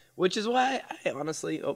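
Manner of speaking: very high-pitched voice breaking and cracking. Speaker mid-explanation to a co-host, voice cracking. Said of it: "as my voice is cracking".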